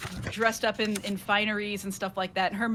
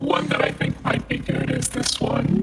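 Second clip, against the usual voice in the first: electronically altered voice, louder; 3 semitones higher, 7 dB louder than usual. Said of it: "you gotta give a little sample of that for chat".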